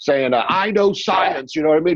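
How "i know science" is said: put-on, old-fashioned eighteen-hundreds English accent. Retelling a comedian marching on stage, imitating Jim Breuer's 1800s English accent. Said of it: "talking like an Englishman from the eighteen hundreds".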